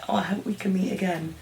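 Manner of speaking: very quiet, sad voice that fades out. Retelling how a character says goodbye in the subtitled version: imitating a sad farewell. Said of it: "sad that she's leaving".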